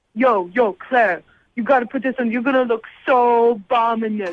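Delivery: put-on laughing bro voice. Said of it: "That's a really good Chase impersonation".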